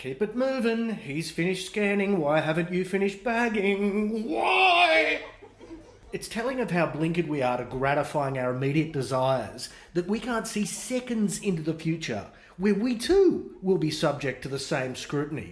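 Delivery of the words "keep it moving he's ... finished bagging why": put-on impatient nagging, high, drawn-out why. Voicing the queue watching someone bag groceries: imitating impatient onlookers. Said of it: "their faces are virtually tapping their watches".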